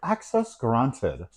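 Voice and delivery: put-on old woman's voice with British accent. Imitating her apartment's gate entry voice: old british lady voice. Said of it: "Now it's a old British lady".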